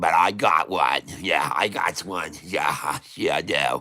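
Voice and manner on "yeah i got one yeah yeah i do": New England accent, very low and unhurried. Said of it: "my New England accent".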